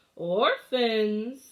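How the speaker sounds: raspy, scratchy voice calling out. A man flings open the front door and calls for the orphans, scratchy voice. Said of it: "Count Olaf called out in his scratchy voice".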